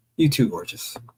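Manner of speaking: normal talking voice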